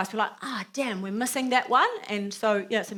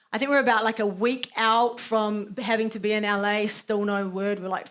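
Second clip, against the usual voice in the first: ordinary talk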